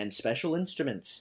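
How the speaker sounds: ordinary delivery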